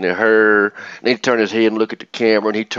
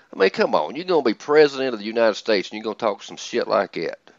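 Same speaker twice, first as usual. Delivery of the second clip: usual speaking voice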